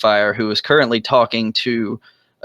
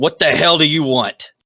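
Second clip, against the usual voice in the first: surly orc monster voice, pitched up; 5 semitones higher than usual. Voicing an orc who looks up at approaching strangers: voicing an orc. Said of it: "the orc is going to look up, and ... say".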